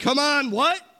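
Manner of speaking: high, loud, rousing, impassioned call.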